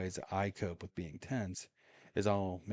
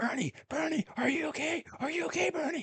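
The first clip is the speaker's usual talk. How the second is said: mock, very high, shrill yelling. Telling a story, the speaker re-enacts running up to a man, retelling a yell. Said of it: "I'm yelling as I run up there".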